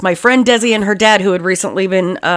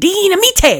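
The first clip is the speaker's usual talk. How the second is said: put-on cartoon squirrel voice, pitched higher; 12 semitones higher than usual. Joking about having too much coffee: Hoodwinked squirrel voice. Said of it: "I feel like that little squirrel from Hoodwinked".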